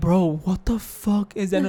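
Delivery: put-on frightened, startled cry. Retelling hearing a noise in the night, imitating own scared reaction. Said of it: "I'm scared out of my ass".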